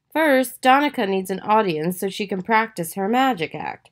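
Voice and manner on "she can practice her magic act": ordinary delivery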